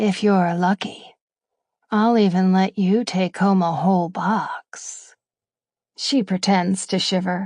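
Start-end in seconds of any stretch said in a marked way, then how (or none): 0.0-5.2 seductive, sultry whisper. The narrator leans close to a woman's ear and speaks in a seductive whisper. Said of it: "drop my voice to whisper seductively against her ear".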